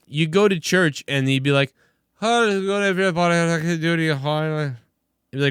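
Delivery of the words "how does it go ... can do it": heavy, thick Irish brogue, high-pitched. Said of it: "He had this gigantic Irish accent".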